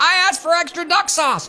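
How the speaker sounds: very high, shrieking yell. Retelling how an angry customer burst back into the restaurant: imitating someone yelling. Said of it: "he starts yelling like".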